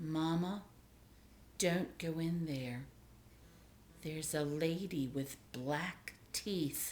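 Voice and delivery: grave, serious, hushed voice. A small child warns Mama as she unlocks the door, serious, hushed voice. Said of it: "says to her in a serious, hushed voice".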